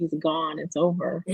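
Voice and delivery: normal talking voice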